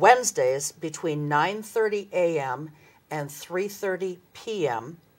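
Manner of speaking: slow, deliberate pace, like dictation. Giving volunteer hours to listeners who may be writing them down: slow, deliberate pace. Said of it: "I'm going to say this slow".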